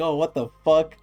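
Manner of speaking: put-on yelling voice. Describing an anime scene where Rak reacts: imitating Rak yelling. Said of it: "yelling, like".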